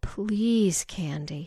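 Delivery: pleading, begging, imploring. A woman pleads again with the other woman, pleading. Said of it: "Betty pleaded again".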